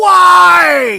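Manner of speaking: loud, high, shrill, raspy scream stretched long. Middle-aged man retells yelling on his lawn after kids walked away: imitating a scream. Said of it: "I'm screaming".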